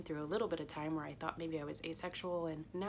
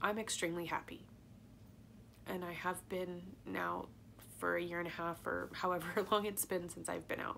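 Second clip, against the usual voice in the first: tearful, crying delivery. Speaker talks in a video, crying for the second time. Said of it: "but now here I am crying for the second time".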